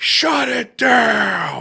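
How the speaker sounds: high-pitched screaming TV host voice. Imagining a bar owner shutting the place down: imitating John Taffer screaming. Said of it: "he's screaming".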